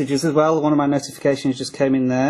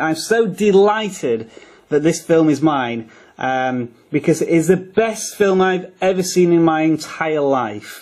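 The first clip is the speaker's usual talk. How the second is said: sarcastic, mock-delighted, dripping with sarcasm; 3 semitones higher than usual. Describing a film that came with the new tablet: sarcastic. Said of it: "if you can't detect the sarcasm in that".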